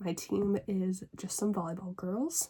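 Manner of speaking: plain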